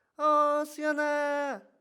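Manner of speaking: very high, loud calling voice. Showing how adults call a child's name, high-pitched voice. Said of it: "우리의 목소리 톤은 높아지게 됩니다. 이렇게 얘기하는 것이 아니라 어 수연아 이런 식으로".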